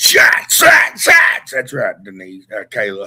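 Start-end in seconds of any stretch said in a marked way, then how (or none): 0.0-1.5 rowdy, loud country-style hollering shout. Calling for shots, trying to say it in Big John's voice. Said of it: "I try to say that in Big John's voice".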